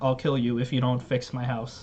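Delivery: ordinary delivery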